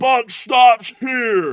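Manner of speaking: high, slow, loud shouting like a wrestling promo.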